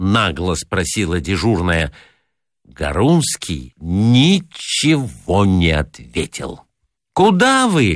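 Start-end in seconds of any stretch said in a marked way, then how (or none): 7.1-8.0 very high, shrill shout. A hotel floor attendant calls to a guest hurrying off without his key; shouted after him. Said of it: "крикнула она ему вслед".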